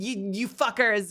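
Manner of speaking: Brooklyn New York accent. Speaker describes his accent drifting, slipping into a new york brooklyn accent. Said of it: "I sound like I'm fucking from New York and I'm playing games in Brooklyn".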